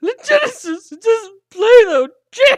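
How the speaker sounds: mock very high, very loud blubbering, sobbing speech. Retelling what a crying soldier said: imitating someone crying. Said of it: "He starts crying".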